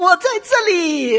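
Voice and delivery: high, slow, loud calling out.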